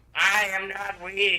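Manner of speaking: loud, booming, very slow, one word at a time. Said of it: "I hate Omega's voice here".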